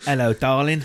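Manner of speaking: mock London Cockney accent.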